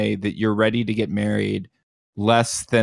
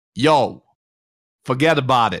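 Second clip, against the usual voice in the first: put-on Chicago accent sliding into Brooklyn accent; 3 semitones higher, 4 dB louder than usual. Trying a chicago accent that keeps turning into brooklyn: put-on brooklyn accent. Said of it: "It wants to go to Brooklyn".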